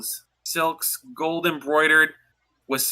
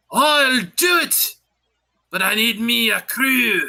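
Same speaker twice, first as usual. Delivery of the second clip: high, full-volume shout at the top of the lungs; 7 semitones higher, 3 dB louder than usual. Narrating what a character says in the game, shouting at the top of his lungs. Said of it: "he shouts at the top of his lungs".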